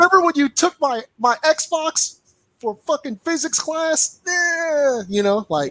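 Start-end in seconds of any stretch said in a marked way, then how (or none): 0.0-4.2 put-on high, mouthy, defiant kid voice. Imagining what a grown child will say to their father: imitating his future kid cursing him out. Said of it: "they gonna be like".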